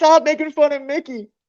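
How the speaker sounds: very high-pitched scolding yell. The speaker quotes his wife yelling at him: retelling a yell. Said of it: "My wife just yelled at me".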